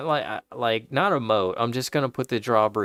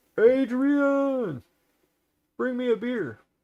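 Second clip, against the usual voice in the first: terrible put-on voice, very high, name stretched out; 12 semitones higher than usual. Impression of Rocky Balboa after twenty years of marriage: Rocky Balboa voice. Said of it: "my impression of Rocky Balboa after twenty years of marriage".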